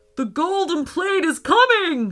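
high, loud shouting. Nigel hears a magical sizzle from the river mid-fight; shouted. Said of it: "shouted Nigel".

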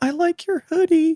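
very high, slow, hesitant nervous voice. In a grocery aisle, speaker imitates a stranger who spoke to them, imitating a really nervous voice. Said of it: "somebody with like a really nervous voice".

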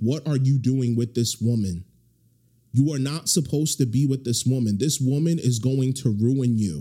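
ordinary talk, nothing marked

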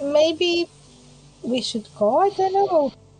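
slow, drawn-out, just-between-us confiding tone. Speaking just between the group, away from the loony, slow and quiet. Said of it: "I say that slow, like, not very loudly, just between us".

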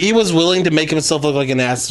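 plain

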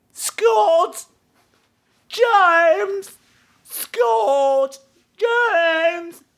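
annoying, very high, slow, drawn-out calling out. Mocking a girl in a movie who keeps calling two names: imitating an annoying girl calling names. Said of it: "that annoying girl who had ugly shoes who spent the whole movie going".

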